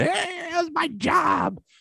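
mock very high, very slow, drawn-out Boston blubbering. Ranking movie picks, the speaker retells a scene as a mock-crying Ben Affleck impression. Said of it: "crying like a little bitch boy from Boston".

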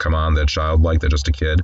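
ordinary delivery

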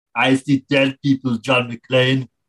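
put-on Austrian-accented action-hero voice. Acting out an audition tape for the kid role: Arnie voice. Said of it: "a cassette of Arnie auditioning".

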